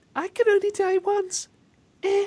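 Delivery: sweet, cutesy, very high squeaky voice. Imitating a game fighter's defeat line: imitating Terra's cutesy voice. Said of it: "she just went".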